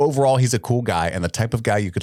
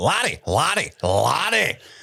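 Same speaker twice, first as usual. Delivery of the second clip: put-on effortful Scottish accent, pitched up; 7 semitones higher than usual. Practicing a name before reading an email aloud, attempted scottish accent. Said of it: "trying so hard to read this email in a Scottish accent".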